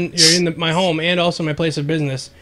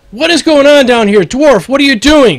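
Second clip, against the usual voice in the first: very loud, booming yell, pitched high; 8 semitones higher, 10 dB louder than usual. Voicing a man at the top of the stairs calling down to a dwarf, yelling down the stairs. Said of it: "The man at the top of the stairs yells".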